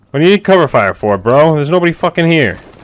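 high, loud yelling straight into the mic. During an online game, a player answers a teammate's call for cover fire, yelling into the mic. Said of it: "Sorry if I was yelling in the mic".

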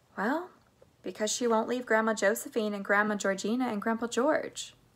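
ordinary delivery

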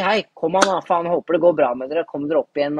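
normal talking voice

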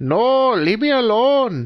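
very high, put-on caricatured Indian accent. Playing a scene with Grandpa, speaking in a racist-sounding Indian accent. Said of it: "It's turning into a racist Indian accent".

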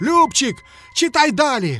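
frightened wail. The piglet urges the little mouse to keep reading, wailing in fright. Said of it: "кабанчик злякано заголосив".

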